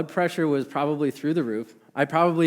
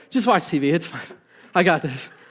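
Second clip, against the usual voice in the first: exasperated, put-on fed-up, dismissive tone; 2 semitones higher than usual. Retelling what the speaker told their dad while a child cried, mock-exasperated. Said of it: "I think in an exasperated voice".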